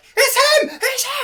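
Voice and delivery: terrified, panicked, drawn-out shriek, very high and loud. Narrator voices a character who spots the player's character: Voivod screaming in panic. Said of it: "and then screams".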